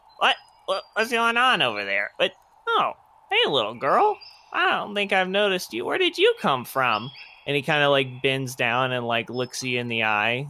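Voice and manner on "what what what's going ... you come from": high, swooping goblin character voice. Voicing a goblin sheep herder who spots a stray sheep: goblin sheep herder voice. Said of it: "He's like, / this little goblin sheep herder".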